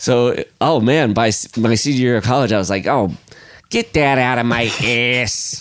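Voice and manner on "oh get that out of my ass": put-on Illinois accent. Retelling own words from senior year of college: put-on Illinois accent. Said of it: "now you have the accent".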